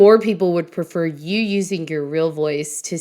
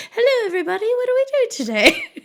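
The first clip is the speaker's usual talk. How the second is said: put-on British accent pitched very high. Asking the guest whether he talks differently in person, the host does a British accent impression. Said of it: "he's got this British accent".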